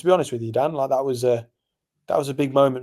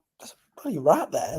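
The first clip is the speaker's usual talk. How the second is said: quiet, hushed, kept down under the breath; 4 semitones higher than usual. Retelling warning the bartender about a rat, retelling a hushed warning. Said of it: "trying not to say it loud".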